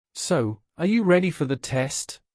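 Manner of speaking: ordinary talk, nothing marked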